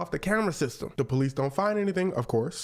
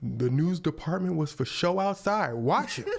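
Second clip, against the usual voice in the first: plain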